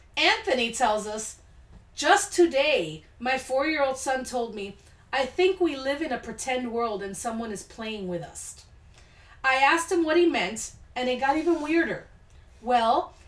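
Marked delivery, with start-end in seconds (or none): none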